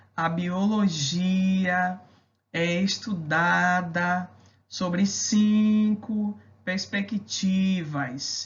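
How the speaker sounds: each stressed syllable marked out clearly and hammered. Imitating a teacher who marks stressed syllables in class, strongly marked stressed syllables. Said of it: "costuma dar aula marcando as sílabas tônicas".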